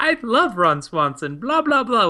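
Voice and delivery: gushing put-on English accent. Retelling a talk show guest gushing about Ron Swanson: Lena Headey's English accent. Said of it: "with her English accent".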